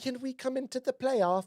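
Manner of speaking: very high, fake, put-on British accent. Joking about being let into the playoffs after time with the UK guys, fake British accent. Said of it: "so we all have fake accents now".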